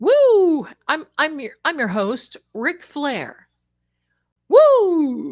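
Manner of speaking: belted out, every "woo" stretched long. Running a giveaway and hyping entries: Ric Flair impression. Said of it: "I sound like Ric Flair".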